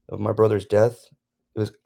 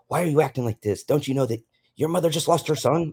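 acted, high-pitched, angry scolding; 6 semitones higher than usual. Retelling what an aunt said when she got mad: imitating an angry aunt. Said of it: "she got mad at me".

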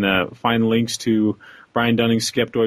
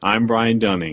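even, level, businesslike, professional announcer tone. Imitating Brian Dunning's podcast intro: level professional voice imitating Brian Dunning. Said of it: "in the most level, professional sounding voice".

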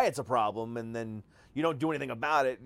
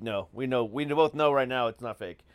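ordinary talk, nothing marked

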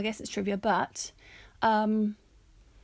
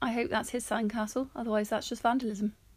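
plain

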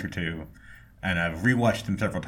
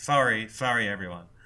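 strong put-on Canadian accent, heavy on "sorry"; 4 semitones higher than usual. Imitating the lead actress's catchphrase: imitating a strong Canadian "sorry". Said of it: "And I'm not even doing it".

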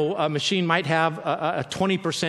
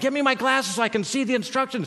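mock high-pitched, frustrated, loud yelling; 8 semitones higher than usual. Retelling yelling at Diane while the smoke alarm went off, retelling his own yell. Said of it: "I'm yelling at Diane".

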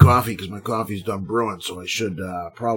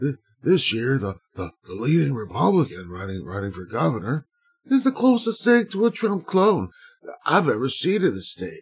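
mock senile old politician voice, higher; 5 semitones higher than usual. Reading a news quote aloud as Joe Biden: reading like Joe Biden. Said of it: "I gotta read it like fucking Joe Biden".

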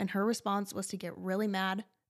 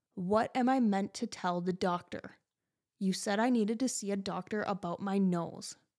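acted-out sharp, hostile, aggressive angry snap. Retelling a woman's reply: imitating someone snapping aggressively. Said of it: "She snapped aggressively".

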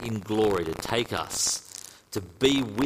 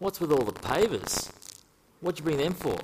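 put-on Australian accent, pitched up; 6 semitones higher than usual. Telling a joke story, voicing an archangel: australian accent. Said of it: "who I think has an Australian accent".

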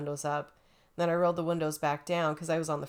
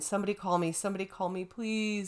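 put-on, bawling, crying voice; 3 semitones higher than usual. Speaker retells what they kept saying the whole way, retelling a bawling plea. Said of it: "I was bawling the whole way".

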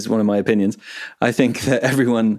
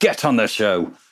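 put-on scolding tone. Reading the podcast's "Get on the show" link text: mock telling off a kid. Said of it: "like a kid's messing about in a supermarket".

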